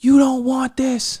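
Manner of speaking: imitated yelling. Retelling hitting an opponent on his back, imitating yelling at him. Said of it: "I start yelling at him".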